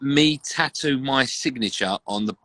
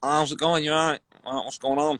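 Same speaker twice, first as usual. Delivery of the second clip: fake, put-on Manchester accent; 2 semitones higher than usual. Speaker retells greeting people while pretending to be from Manchester: put-on Mancunian accent. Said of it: "I'm going to put on a Mancunian accent".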